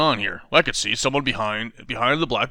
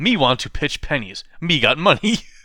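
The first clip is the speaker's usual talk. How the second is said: put-on childish, toddler-style baby talk voice; 3 semitones higher than usual. Retelling a story where a ten-year-old uses baby talk: baby talk voice. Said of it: "I'll use baby talk so nobody comes suspicious".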